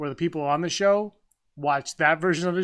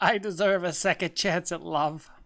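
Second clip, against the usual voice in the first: heartfelt, earnest contestant voice; 3 dB quieter than usual. Imitating a reality dating show contestant: imitating Bachelor contestants. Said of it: "That's my impression of the, the Bachelorette".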